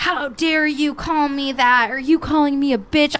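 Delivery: put-on outraged, offended, furious indignant outburst. Retelling how a guy reacted after you called him a name, act out his furious reply. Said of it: "He got so mad".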